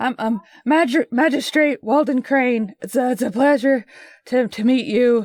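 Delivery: winded, out-of-breath character voice. Walden Crane introduces himself, Walden Crane catching his breath. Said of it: "as he catches his breath".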